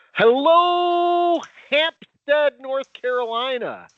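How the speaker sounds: high, loud shouting call.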